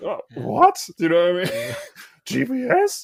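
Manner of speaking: very high, swooping, put-on astonishment. Reacting to people who post warnings about gps, in mock surprise. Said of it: "it's my mock surprise voice".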